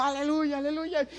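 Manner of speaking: very high, loud shout. Asking listeners to imagine someone coming down the aisle: imitating someone shouting hallelujah. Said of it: "pero entra gritando".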